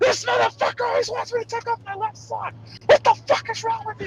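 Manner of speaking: mock angry screaming voice. Retelling how a streamer reacted to a demand: imitating someone screaming angrily. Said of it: "started screaming at the camera like".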